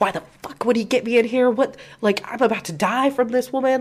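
play-acted yelled outburst, full screaming. Retelling how a woman was screaming at Reese the whole time: retelling a woman screaming. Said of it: "screaming at Reese".

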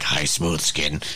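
put-on undead ghoul voice. Imagining how a character in the game would greet someone: Fallout ghoul voice. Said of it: "She's just like a ghoul and was like".

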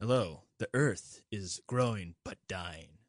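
solemn, slow, deep documentary narrator voice, dropped down. Showing a way of doing narration: serious narration voice. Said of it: "I always want to go down like this and be kind of deeper".

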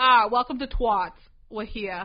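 very loud, put-on New England accent. Show host imagines having a New England accent while welcoming listeners: put-on New England accent. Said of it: "Imagine if I did have a New England accent".

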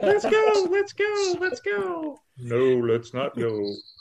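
very high, very slow goofy sing-song dub voice. Acting out comic characters as a bad lip reading: bad lip reading voice. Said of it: "A bad lip reading version of the character".

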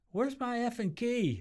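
put-on scream. Recounting the moment the speaker started screaming about a key, retelling a scream. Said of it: "I started screaming".

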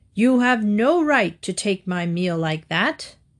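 severe, reproachful, stern, called from a distance. After the lion takes his lamb, the wolf calls from a safe distance in a stern voice. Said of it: "he called in a stern voice".

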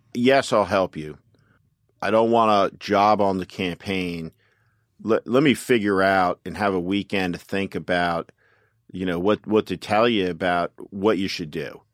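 ordinary talk

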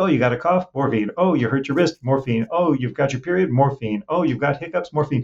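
careless, casual, offhand, rapid-fire patter. Retelling how doctors across America prescribed morphine for everything: imitating doctors prescribing morphine.

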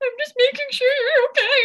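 very high, loud, tearful sobbing voice. Retelling going into a sister's room at night, imitating her past crying self. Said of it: "go into my sister's room crying".

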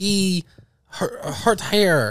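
put-on goofy, cute, silly talk. Joking with friends about a stomach ache: put-on goofy cute talk. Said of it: "We're so cute when we talk like that".

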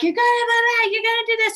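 shrill, very high scream, gonna drawn out. Recalling getting the kids to the bus stop, retelling screaming at kids. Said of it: "I'm screaming like".

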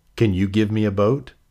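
ordinary talk

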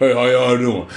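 deep, gruff monster impression. A speaker mimics how a woman talks before a man walks in, Cookie Monster voice. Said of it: "talking like Cookie Monster".

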